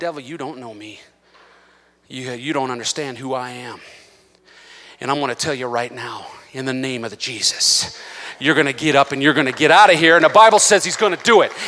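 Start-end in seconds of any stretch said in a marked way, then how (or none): 0.0-10.2 quiet, hushed, much lower pitch. Showing how to stand up to the devil, the speaker says it quietly. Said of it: "you say quietly".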